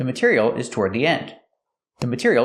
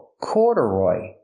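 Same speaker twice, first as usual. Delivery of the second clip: corduroy, weight on the first syllable cor. Explaining a word's pronunciation when asked: stress on first syllable of corduroy. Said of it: "The stress is on the first syllable".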